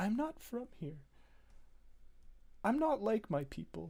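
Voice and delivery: sobbing while speaking. After a high persuasion check, a character goes on speaking, sobbing while speaking. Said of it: "in between sobs, she she goes on to say".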